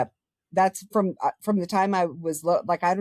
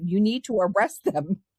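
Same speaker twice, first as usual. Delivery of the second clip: put-on scream, pitched higher; 3 semitones higher than usual. Retelling how Dad outside yelled at the officer: imitating someone screaming. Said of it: "he was screaming".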